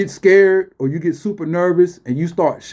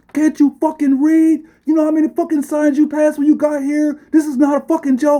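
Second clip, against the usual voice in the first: mock furious yelling, very high; 10 semitones higher than usual. Speaker recounts being caught visiting Area fifty-one, retelling angry yelling. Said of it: "They was going ham at me".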